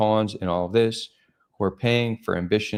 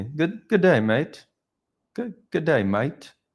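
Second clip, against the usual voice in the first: clumsy British accent drifting Australian, pitched up; 7 semitones higher than usual. Trying a british accent the speaker is almost embarrassed by, attempted british accent. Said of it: "Is that more Australian?".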